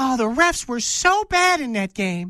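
mock whiny voice. Speaker mocking Michigan fans' excuses about a lost game, in a put-on whiny Michigan fan complaint. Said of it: "That's my Michigan fan complaining voice".

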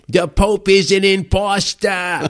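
put-on wretched, loud, shrill, hard New York accent. Retelling a firebrand woman's pronouncements, in a wretched hard new york accent. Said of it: "in this most wretched voice with this hard New York accent".

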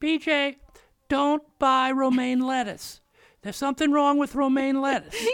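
high, loud fussing mother voice. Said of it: "You do a very good impression of her".

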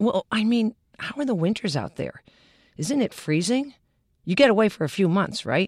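disbelieving, doubting, incredulous tone. The speaker recalls how people have asked about the winters, mimicking their incredulous voice. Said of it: "in that incredulous voice".

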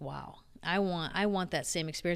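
normal talking voice

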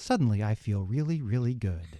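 loose, relaxed, drugged-up commercial read voice. Performing one of his favorite cereal commercials, Narco Bran Flakes commercial impression. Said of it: "That's a pretty good impression".

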